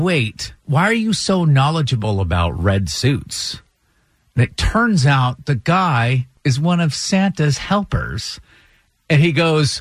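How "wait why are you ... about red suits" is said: ordinary talk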